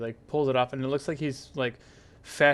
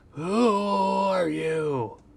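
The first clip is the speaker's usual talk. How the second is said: long, high, keening wail, "are" drawn out; 7 semitones higher, 4 dB louder than usual. Narrator voices a man calling out to those aboard his ship: wailing voice. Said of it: "like a kind of a like a wailing voice".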